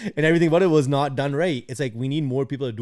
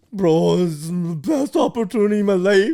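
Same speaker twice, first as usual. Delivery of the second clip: crying, high, drawn-out bawling with tearful pleading tone; 6 semitones higher, 4 dB louder than usual. Retelling a fan crying after the show: imitating someone bawling. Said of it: "bawling his eyes out".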